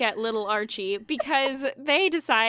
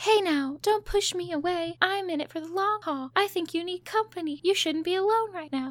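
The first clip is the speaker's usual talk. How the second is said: raised-pitch female character voice; 6 semitones higher, 3 dB quieter than usual. Retelling a TV scene, imitating Veronica comforting Archie. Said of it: "Great impression".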